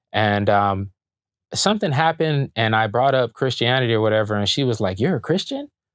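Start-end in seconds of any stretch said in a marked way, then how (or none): 5.0-5.7 shrill, very high, disbelieving, incredulous tone. Retelling a girl's question at school: imitating incredulous disbelief. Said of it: "the way she said it and the way she was looking at me".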